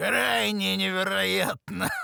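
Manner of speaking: mocking, scornful tone. Reading a story aloud, a thug repeats a line: mocking tone. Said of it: "насмешливо повторил он".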